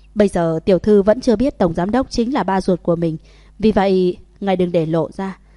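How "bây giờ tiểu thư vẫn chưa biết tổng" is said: usual speaking voice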